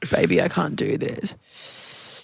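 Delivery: whispered, breathy, half-hearted, noncommittal male murmur. Acting out a man's line, imitating a non-committal man. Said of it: "that non-committal man voice".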